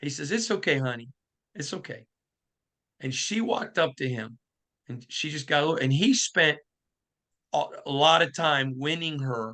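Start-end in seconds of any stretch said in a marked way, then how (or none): 0.3-2.1 really sweet, comforting voice. Retelling a man reassuring a scared little girl, in a really sweet voice. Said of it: "in a really sweet voice".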